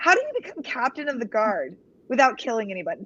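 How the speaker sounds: ordinary delivery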